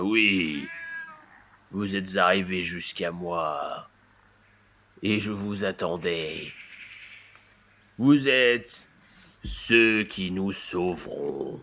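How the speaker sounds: grand, slow big-cat voice, "moi" drawn out. Storyteller voicing the big cat as it speaks to the arrivals, big voice. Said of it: "le gros chat reprend de sa grosse voix".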